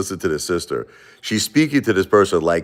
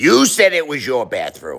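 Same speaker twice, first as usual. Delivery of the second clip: put-on woman's voice, pitched higher; 6 semitones higher than usual. Retelling what she said about the bathroom, imitating her voice. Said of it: "we'll do it in her voice".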